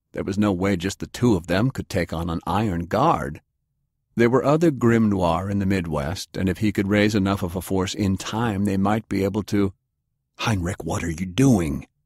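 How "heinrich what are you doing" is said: hissed, hissing voice. Narrator reads a character's line as the young German opens his door, hissed. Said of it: "He hissed".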